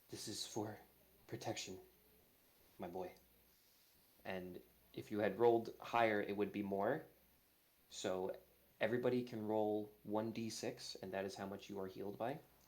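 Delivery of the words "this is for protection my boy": close, hushed, soft whisper. Game master voicing Ayun whispering in Dewey's ear through the portal, Ayun whispering. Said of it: "you start hearing like whispers in your ear".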